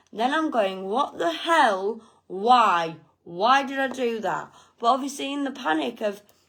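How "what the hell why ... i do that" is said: acted-out angry voice. Retelling finding the car lights left on: imitating own anger at self. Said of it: "Then I'm angry at myself".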